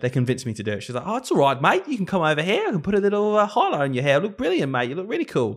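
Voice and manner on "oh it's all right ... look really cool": put-on Australian accent, high, lilting, friendly. Quoting a woman who talked the speaker into it, in a put-on Australian accent. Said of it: "That was me doing her accent, by the way, from Australia".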